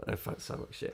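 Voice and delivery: near-voiceless, soft rasp.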